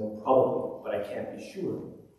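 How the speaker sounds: quiet, subdued, soft hushed voice. Telling a joke, voicing a veteran who answers a student: soft voice. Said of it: "in a soft voice".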